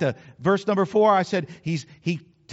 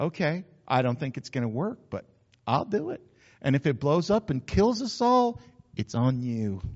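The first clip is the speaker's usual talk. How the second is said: low, quiet, condescending, humoring patronizing tone; 5 semitones lower, 6 dB quieter than usual. Acting out how he replied to the request, mock-patronizing tone. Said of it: "a little patronizing tone in his voice".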